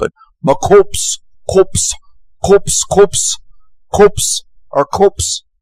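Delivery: attempted South African accent, rough and very high. Quoting a creepy creature's words, attempting a south african accent. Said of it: "I'll try to do the South African accent".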